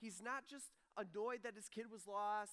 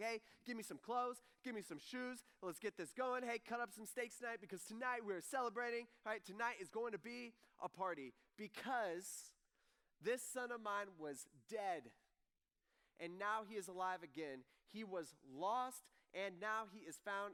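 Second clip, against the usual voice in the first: ordinary talk, nothing marked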